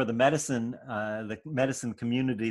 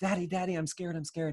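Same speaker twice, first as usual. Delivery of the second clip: mock, high, frightened little-kid voice; 6 semitones higher, 4 dB quieter than usual. Acting out a child who runs to daddy: imitating a scared child. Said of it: "comes running to daddy's".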